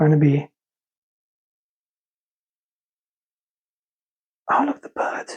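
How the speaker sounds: hushed, eager, excited whisper. Unboxing models and spotting a bird, excited: whispering. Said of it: "why am I whispering?".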